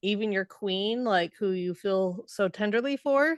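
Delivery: plain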